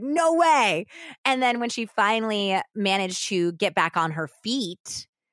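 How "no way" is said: play-acted very high, shrill, loud yelling. Retelling a woman's defiant answer to an attacker: imitating someone yelling back. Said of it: "yelling at him back".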